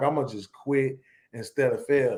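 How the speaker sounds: ordinary talk, nothing marked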